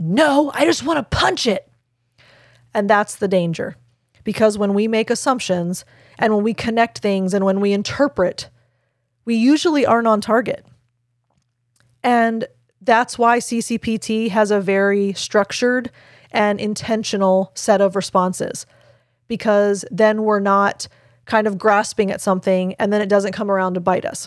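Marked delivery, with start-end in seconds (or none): 0.0-1.7 put-on angry high yell. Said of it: "he actually yelled at her and said".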